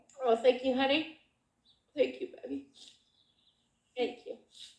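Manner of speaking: crying through the words in a breathy whisper. Thanking someone while speaking about a late father: crying while talking. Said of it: "Are you crying?".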